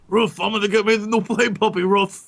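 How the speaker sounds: talking like a dog. Joking about a Play Puppy magazine for dogs, in a dog voice. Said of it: "That's my dog voice".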